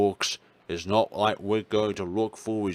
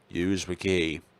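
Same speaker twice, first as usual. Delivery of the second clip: plain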